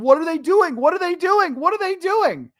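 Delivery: repeated, very high-pitched yelling. Telling how they jumped off the couch during a game, retelling a yell at the TV. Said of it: "I was yelling at the television".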